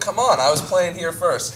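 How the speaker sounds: ordinary delivery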